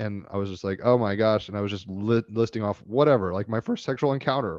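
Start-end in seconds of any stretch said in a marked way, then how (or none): 3.3-4.6 cracked voice breaking in the middle of a phrase. Recalling topics listed in an earlier talk, voice cracking. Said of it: "my voice cracked during that".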